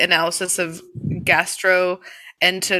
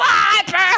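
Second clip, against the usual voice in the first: put-on scream, much higher pitch; 14 semitones higher, 3 dB louder than usual. Describing how she reacted to hands in soapy water, imitating someone screaming. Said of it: "She'd be like".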